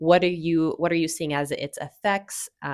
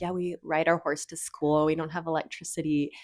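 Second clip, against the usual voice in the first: mock, dry, tongue-in-cheek sarcastic joking tone; 5 dB quieter than usual. Retelling what dad told people about Bozeman: imitating dad joking sarcastically. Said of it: "he would say it kind of, like, jokingly or sarcastically".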